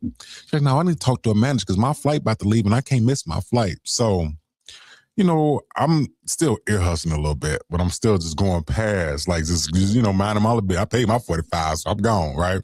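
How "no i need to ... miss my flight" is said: high-pitched, furious, angry ranting outburst. Retelling a woman going off on a lady at the airport: imitating a woman angrily going off. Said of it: "she going off on this lady".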